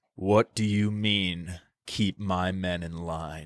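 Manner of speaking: dark, deep, low, hushed, ominous golem tone. Recapping an actor's scene with a friend, imitating a deep ominous voice. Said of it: "with the deep voice was like".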